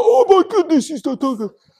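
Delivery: Bronx New York accent. Explaining a scripture verse, the speaker slips into a New York accent. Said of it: "I've like taken on this New York accent".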